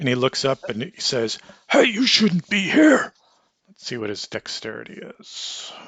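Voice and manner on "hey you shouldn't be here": very loud, very high, shrill shouting yell. Narrator voicing a man who looks up and finds you, yelling. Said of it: "He yells at you".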